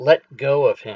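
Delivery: calm, composed, commanding, in-charge voice. Mentally whispering to someone in the scene: calm yet in-charge voice. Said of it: "in a very calm yet in charge voice".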